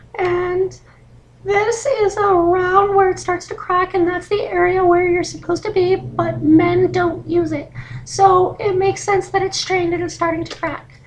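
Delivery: high falsetto held throughout. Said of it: "back into falsetto".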